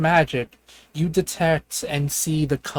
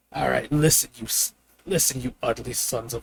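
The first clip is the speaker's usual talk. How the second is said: really gruff, rough creature voice; 3 semitones lower, 3 dB quieter than usual. Telling Gregory what a creature says once his spell translates it: really gruff voice. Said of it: "In a really gruff voice".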